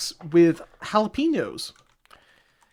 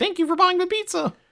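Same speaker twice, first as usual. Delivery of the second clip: pitched way up like a cartoon mascot. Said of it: "Little Caesar should pop up and say".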